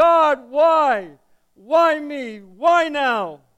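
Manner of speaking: very loud, very slow, drawn-out anguished wail. Telling a joke, voicing a dying man in a ditch: crying out to god in anguish. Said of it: "and he's crying".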